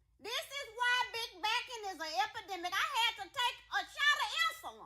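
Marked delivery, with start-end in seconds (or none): 0.2-2.7 fast, rattled-off delivery. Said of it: "And this is why big backing is an epidemic".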